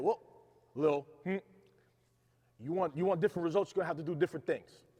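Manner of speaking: put-on aggressive voice. Retelling a father's famous saying from childhood: imitating dad, aggressively. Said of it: "he said it in a much more aggressive manner".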